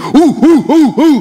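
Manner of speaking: high, loud, anxious, dismayed oohs.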